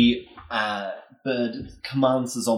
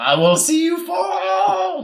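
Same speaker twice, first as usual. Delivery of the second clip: screeching owl voice, much higher; 5 dB louder than usual. In the battle, the narrator voices the dire owl: screeching owl voice. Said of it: "The dire owl screeches".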